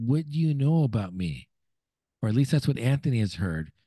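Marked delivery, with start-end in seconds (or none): 0.0-1.5 put-on heavy, thick Irish or Scottish accent. Retelling what a guy at a steakhouse said, in a thick Irish or Scottish accent. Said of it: "And so in a thick accent".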